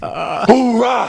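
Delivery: high shouted team cheer, hoorah.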